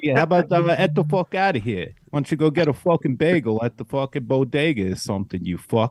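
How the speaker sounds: put-on New York accent. Asked to show off a New York accent: put-on New York accent. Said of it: "I want to hear your New York accent".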